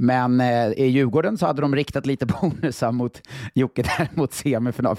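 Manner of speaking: speaking through breaking laughter, laughing through the words. Discussing Djurgården's bonuses aimed at Jocke, laughing while talking. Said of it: "Förlåt, jag skrattar".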